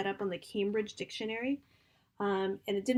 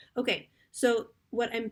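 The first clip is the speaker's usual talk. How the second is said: normal talking voice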